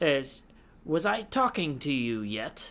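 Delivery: surprisingly calm, evil tone with swooping pitch. Narrating a character who addresses you, surprisingly calm and evil. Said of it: "in a surprisingly calm and evil".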